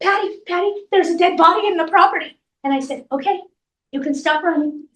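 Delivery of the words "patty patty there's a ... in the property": mock frantic shouting, high, panicked yell. Retelling what a woman yelled to them over the phone, imitating someone yelling. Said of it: "And she's yelling at me".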